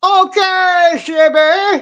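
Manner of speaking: high, loud yell. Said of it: "now I'm yelling".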